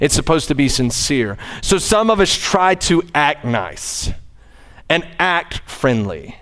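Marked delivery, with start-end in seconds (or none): 3.1-6.2 the word act hit hard, stressed both times. Talking about trying to seem nice, with stress on act each time. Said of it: "the emphasis on the word act".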